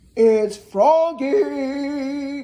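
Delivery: croaking, ribbiting frog voice. Reading a children's story aloud, Froggy knocks at Rabbit's door, deep croak. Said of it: "croaked a deep voice".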